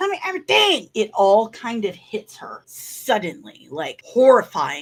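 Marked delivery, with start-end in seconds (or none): 0.0-0.9 demanding yell with the voice very high. Speaker recounts a man shaking a woman, retelling his yell. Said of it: "he's basically shaking her and yelling at her".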